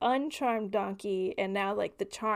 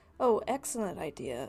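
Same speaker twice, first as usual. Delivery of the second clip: usual speaking voice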